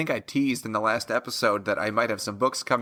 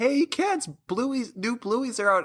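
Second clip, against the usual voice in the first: very high, thrilled, super-excited, acted out; 12 semitones higher than usual. A parent retells telling their kids new bluey is out: mock super-excited announcement. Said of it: "like super excited".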